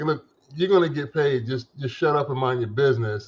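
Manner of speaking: usual speaking voice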